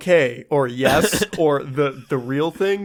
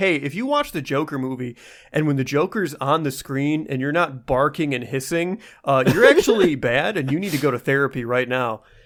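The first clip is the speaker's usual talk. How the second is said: ordinary talk, nothing marked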